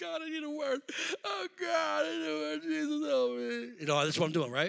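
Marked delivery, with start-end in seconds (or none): 0.0-3.7 mock crying, high and tearful, pleading tone. Retelling praying on the bathroom floor at work: imitating own crying prayer. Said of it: "I'm crying, crying".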